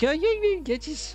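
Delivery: put-on Birmingham accent, Brummie, with the voice lifted. Between quiz questions, recall Tim Spall saying it and do Tim Spall's Brummy accent. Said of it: "With his Brummy accent".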